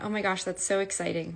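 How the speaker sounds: plain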